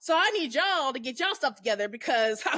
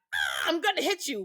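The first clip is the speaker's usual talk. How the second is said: mock furious kid voice, lashing out; 2 semitones higher than usual. Retelling a girl child trying to beat up everybody: imitating an angry child. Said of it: "why are you so angry?".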